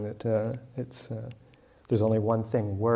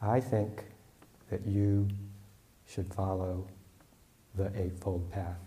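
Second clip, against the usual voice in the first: very slow, halting, broken up by pauses; 4 dB quieter than usual. Retelling the monk's answer to the arguing pair, speaking very slowly. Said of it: "said very slowly".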